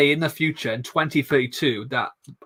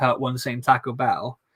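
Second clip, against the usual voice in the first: normal talking voice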